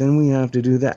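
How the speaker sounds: loud, eerie, creepy, machine-like woman's voice. Describing a creepy voice that comes on every day, imitating creepy robotic woman voice. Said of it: "a woman that speaks like this".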